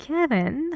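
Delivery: the name said with rising pitch. Contrasting rising and falling intonation on names, rising pitch on kevin.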